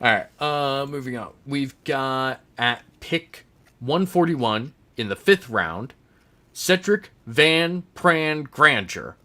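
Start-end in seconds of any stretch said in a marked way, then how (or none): 6.5-9.0 very slow, deliberate, careful enunciation. Host announcing a fifth-round draft pick, unsure of the name, said very slowly. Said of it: "I say that very slowly".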